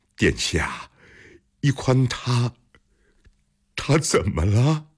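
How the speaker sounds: trembling, quavering voice. A character asks a royal highness what has happened to someone, trembling voice. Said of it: "他颤声问".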